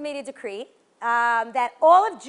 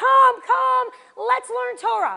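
acted, very high, raspy, loud, drawn-out yell; 10 semitones higher, 5 dB louder than usual. Telling the story of Rabbi Akiva to an audience, retelling a yell. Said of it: "and he's yelling".

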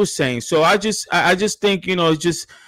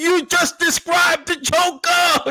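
mock very high, stretched-out, drawn-out scream; 12 semitones higher than usual. Retelling yelling at a critic's comments on the phone: imitating own screaming. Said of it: "I literally screaming".

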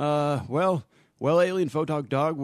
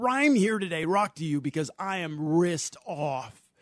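put-on cartoon talking dog character voice; 2 semitones higher than usual. The speaker voices their dog on the show: talking dog voice. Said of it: "continue, Alien Photog Dog".

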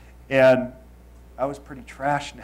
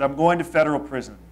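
ordinary talk

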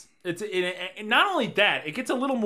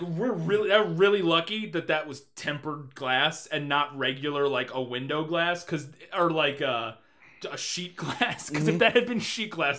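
ordinary delivery

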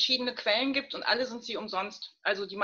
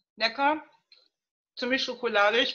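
talking while chewing, mouth full, smacking; 2 semitones higher, 5 dB louder than usual. Speaker tasting a mug cake on a show, smacking while eating. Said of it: "Entschuldigung, muss schmatzen".

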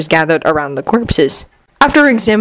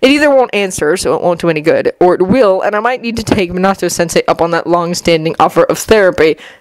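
ordinary delivery, nothing marked

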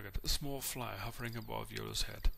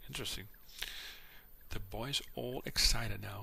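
ordinary delivery

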